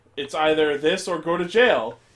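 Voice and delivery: ordinary talk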